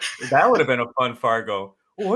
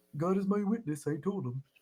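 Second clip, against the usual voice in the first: high-pitched put-on character voice; 5 semitones higher, 9 dB quieter than usual. Imitating the actor who plays Ed Gein: Bullwinkle voice as Ed Gein. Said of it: "I'm just gonna break into that".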